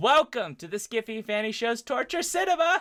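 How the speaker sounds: overly loud. Host opening the skiffy fanny show's torture cinema, too loud. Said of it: "Am I am I too loud?".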